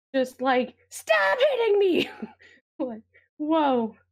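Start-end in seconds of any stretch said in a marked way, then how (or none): 0.9-2.1 very high, loud, shrieking scream. Imagining hitting wood with an axe and it screaming back, imitating screaming wood. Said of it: "imagine you hit a wood with an axe and it starts to scream".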